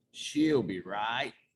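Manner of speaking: put-on relaxed, unbothered, casual Australian accent. Telling about the album sessions, the speaker starts imitating Mike Clink. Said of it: "And he's just like".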